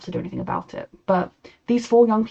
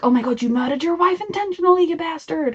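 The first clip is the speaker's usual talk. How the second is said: bad, dodgy, half-American put-on accent, pitched up; 9 semitones higher than usual. Imagining the family's shocked reaction, the speaker slips into a dodgy American accent. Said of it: "putting on a dodgy, somewhat American accent".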